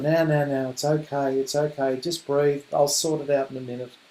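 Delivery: acted, gentle, soft, calming, soothing reassurance. Showing what to say to an upset child: soothing. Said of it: "say nice things like".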